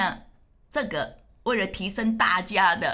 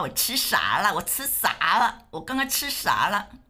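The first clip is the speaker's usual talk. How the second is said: northeastern Chinese Dongbei dialect accent. A speaker acts out a careless eater, in a Northeastern Chinese accent. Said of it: "这东北话".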